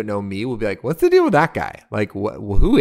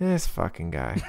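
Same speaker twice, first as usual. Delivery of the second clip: low, grumbled mutter under the breath; 6 semitones lower, 9 dB quieter than usual. Describing their first reaction to people who look like the listener: muttered under the breath. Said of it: "my initial reaction would be under my breath".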